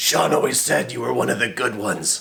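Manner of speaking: rough, creaky, rasping superhero voice, sounding sorry. Suddenly feeling remorse about Sean while telling a story, in a Batman voice. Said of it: "all of a sudden as Batman".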